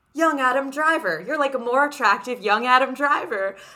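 mock over-eager, gushing, flattering hype. Retelling how a new acquaintance greeted the speaker: imitating an excited hype man. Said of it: "the most hype man I've ever met".

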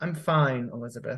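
feeble. Caroline answers elizabeth, who has asked if she's okay, weakly. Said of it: "she said weakly".

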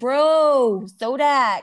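put-on loud, hyped excited voice, "bro" stretched. Imitating travelers excitedly announcing their arrival: imitating excited travelers. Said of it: "I hear it in that voice".

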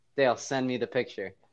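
normal talking voice

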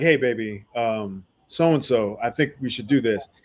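guy's voice, very deep, low and soft. Picturing how Rachel would talk to him, in a low dude voice. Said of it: "lowered her voice like a dude".

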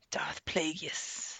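breathy whisper, barely above silence. Discussing the new Star Wars villain, a speaker says his name in the Emperor's voice. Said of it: "I have to say it like the Emperor".

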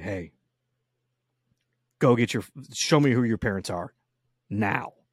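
menacing, stern voice, anger held back. Describing going over to that kid and speaking up, in the best scary dad voice. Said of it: "the best scary dad voice".

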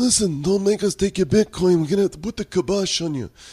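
very high, grunting, strained fake Italian accent. Joking about who usually puts the kibosh on you, fake italian accent, grunting. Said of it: "your Italian. It's kind of a constipated Italian".

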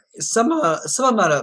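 voice breaking mid-phrase. Speaker wishing listeners well, voice cracking. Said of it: "my voice just cracked".

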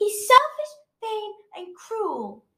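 loud, defiant, very high swooping outburst. She retorts to the other speaker: said loudly. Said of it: "said Daisy loudly".

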